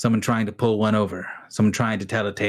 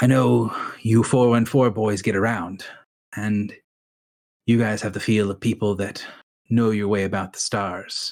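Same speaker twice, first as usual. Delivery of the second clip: measured, confiding, draw-them-close storyteller voice. Narrating a man who addresses a group of boys, in a hushed voice. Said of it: "in a loud enough voice that people can hear him, but quiet enough that people kind of have to lean in".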